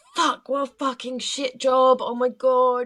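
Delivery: frantic, tearful, high-pitched, loud, stressed-out outburst. Retelling what a distressed lady said after an animal drowned: imitating someone stressed out. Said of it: "stressing out".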